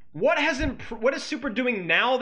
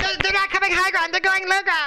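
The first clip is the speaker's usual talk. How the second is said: high, loud squeaky cartoon voice. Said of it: "Sounds like a cartoon character".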